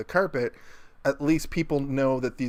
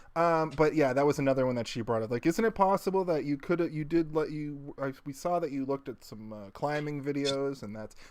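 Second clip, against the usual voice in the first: usual speaking voice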